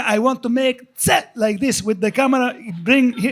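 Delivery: put-on Israeli accent. Retelling a joke on set, pretending to be an Israeli porn star. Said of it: "I just kept going".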